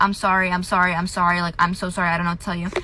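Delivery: mock sobbing, tearful, repeated over and over. Retelling a phone call where someone kept blowing up at them, retelling a crying apology. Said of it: "I was like crying over the phone".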